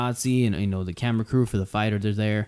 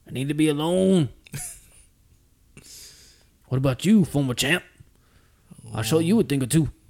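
worked-up, fired-up tough-guy voice; 4 semitones higher than usual. Quoting a boxer from Rocky three: Mister T impression. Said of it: "Hey, Mister T, calm down, Mister T".

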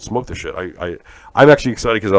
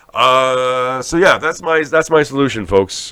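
ordinary talk

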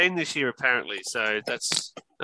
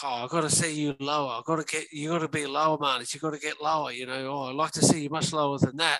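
mock sarcastic put-on voice; 6 dB quieter than usual. Retelling what Dave Warner said to Marnus after the ball went past, sarcastic impression. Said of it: "Dave Warner sort of sarcastically was like".

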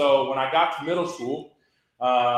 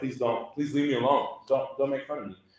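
desperate, earnest, pleading entreaty; 5 dB quieter than usual. Retelling being teased at school, retelling own past begging. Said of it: "I was begging people".

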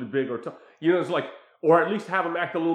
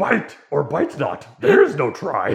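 raised, booming, swooping sing-song sage-teacher voice; 7 dB louder than usual. Joking about a mentor teaching control: Yoda voice. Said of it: "He teaches her".

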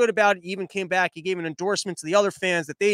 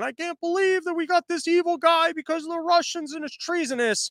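play-acted, very high, weepy sobbing voice; 10 semitones higher than usual. Mocking a broadcaster's coverage of the president: mock crying as Rachel Maddow. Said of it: "crying and going".

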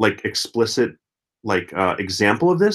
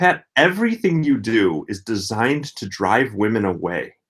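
usual speaking voice

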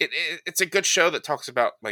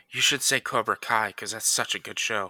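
whispered aside; 2 semitones lower than usual. Suggesting an answer to another speaker: whispering in someone's ear. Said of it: "I'm gonna whisper in your ear".

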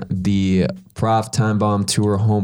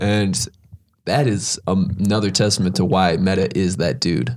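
ordinary delivery

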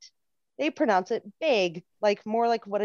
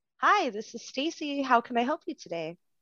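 bright, happy, peppy, super-nice customer-service phone voice; 3 semitones higher than usual. Asked to show a work voice, the speaker greets a caller in a peppy work phone voice. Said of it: "Can you use your work voice for a minute?".

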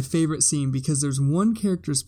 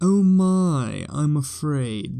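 very slow, lingering, drawn-out grandmother voice. Quoting grandmother, imitating grandmother's voice. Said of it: "That, that was my grandma".

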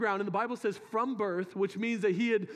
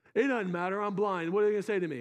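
ordinary talk

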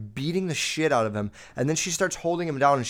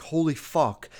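put-on screaming; 2 semitones higher than usual. Retelling a woman's reaction on finding a body: imitating someone screaming. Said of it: "screams and she's like".

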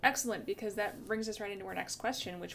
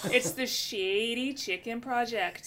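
put-on Minnesota way of talking; 4 semitones higher, 6 dB louder than usual. Saying the project's name, in a put-on Minnesotan accent. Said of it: "I have to put on my best Minnesotan for this".

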